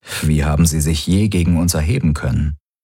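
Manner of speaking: ordinary delivery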